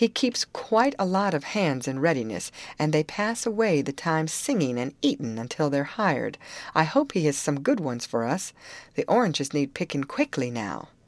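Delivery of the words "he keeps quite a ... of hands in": plain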